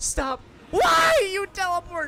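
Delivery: screaming. Streamer fighting a teleporting game boss, screaming at chat's expense. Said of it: "So sorry for screaming".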